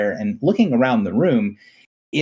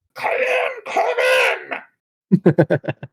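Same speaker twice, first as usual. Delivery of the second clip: put-on shouting old woman voice, higher. Voicing someone behind a heavy door calling the visitor in: yelled old woman's voice. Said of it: "sounds like an old woman's voice says".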